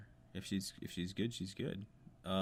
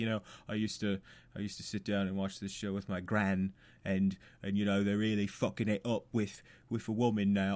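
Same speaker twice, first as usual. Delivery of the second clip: bad fake British accent, slower pace; 6 dB louder than usual. Voicing a hypothetical genuinely upset viewer of the show: bad british accent. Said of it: "That was an awesome British accent".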